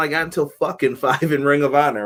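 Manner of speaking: usual speaking voice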